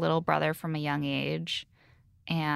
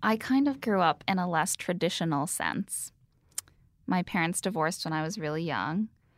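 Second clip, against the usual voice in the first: ordinary delivery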